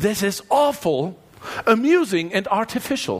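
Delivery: botched, bad, failed put-on British accent. Quoting a queen's reaction to a cathedral, in a failed british accent. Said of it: "That was a German's attempt at a British accent".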